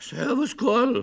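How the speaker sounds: loud, rough, husky and hoarse voice. Greeting a partner in a staged scene as agreed, hoarse voice. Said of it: "dass du mit heiserer Stimme mich begrüßt ... Du bist ja ganz heiser".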